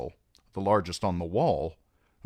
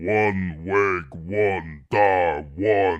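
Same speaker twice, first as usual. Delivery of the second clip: deep, rumbling giant voice, each word drawn out; 4 dB louder than usual. Reading a novel, the giant Wun-Wun speaks before the queen: Wun-Wun's rumbling giant voice. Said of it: "the giant's voice rumbled like a boulder crashing down a mountainside".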